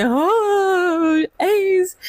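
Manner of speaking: put-on very high tearful wail, drawn-out oh. Telling how her mom caught her crying over ace's death, retelling her own crying. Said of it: "I was actually crying like".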